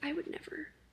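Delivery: whispered, desperate, pleading delivery. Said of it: "and then Lottie's like".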